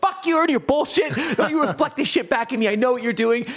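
mock angry yelling through laughter.

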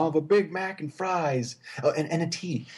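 slow pretend American accent. Describing a man ordering food, the speaker quotes him: fake american accent. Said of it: "He like pretends to do an American accent".

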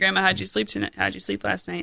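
ordinary talk, nothing marked

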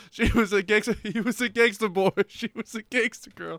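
speech broken up by laughter. Trying to repeat a joke line, laughing while talking. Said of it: "I can't do it without laughing".

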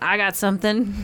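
put-on American Southern accent. Acting out capitalist Americans offering something: Southern accent. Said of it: "We're saying it in Southern accents".

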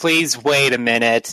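exhausted, rough, rude and dismissive. Voicing a gate guard answering a driver: exhausted-sounding voice. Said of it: "The most exhausted sounding voice you've ever heard says".

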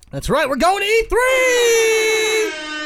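high, loud, excited cheer, big, slow and stretched out.

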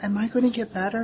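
put-on high, soft small child's voice. Recounting a surgery scene, the patient asks a question in a child's voice. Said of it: "you hear a child's voice saying".

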